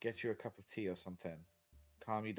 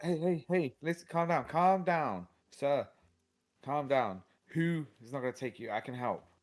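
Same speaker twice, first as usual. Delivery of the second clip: very loud, soothing, convincing calming tone; 5 semitones higher, 8 dB louder than usual. Speaking to a man crawling away toward the door, as convincing as possible. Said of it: "I say as convincingly as I can".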